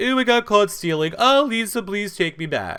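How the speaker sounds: put-on crying voice. Retelling what happened on Vanderpump, imitating Jax crying. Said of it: "Jax cried".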